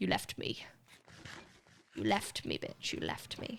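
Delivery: hushed, breathy, whispered, wounded dog voice. Voicing the pet dog's complaint about being left: voicing the dog accusingly. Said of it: "he's like".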